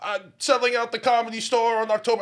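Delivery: very high-pitched, loud comedian voice. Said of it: "Do Bill Cosby now".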